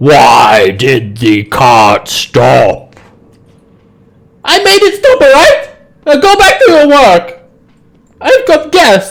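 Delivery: very low, rumbling, swooping giant voice. A game master voices a fire giant shouting at orcs: fire giant yelling. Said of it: "And he yells out in giant".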